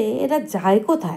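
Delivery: ordinary delivery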